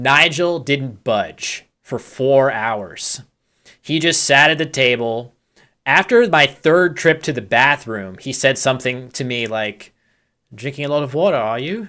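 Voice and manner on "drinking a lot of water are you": put-on quick, rattled-off Kiwi accent. Recalling a remark at the table, the speaker quotes Nigel Richards in his Kiwi accent. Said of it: "in his Kiwi accent".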